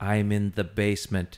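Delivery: machine-like, robotic recorded-message voice. Retelling a strange voicemail message from Rogers, robot voice. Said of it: "this was the message in robot voice".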